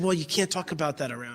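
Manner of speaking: hushed, secretive whisper. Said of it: "hushed, secretive voice".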